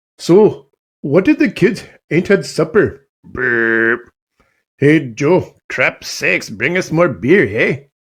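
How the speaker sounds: put-on Canadian accent, casual and chatty. Showing off different Canadian accents, put-on Canadian accent. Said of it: "I'll show you all my different Canadian accent accents".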